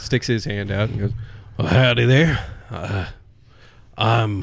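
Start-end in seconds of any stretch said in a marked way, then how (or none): 1.6-4.4 put-on mumbling, muttered old man voice. Voicing an old man who greets a stranger: old man mumbling. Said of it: "he just kinda mumbles".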